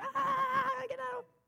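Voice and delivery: high-pitched scream of pain.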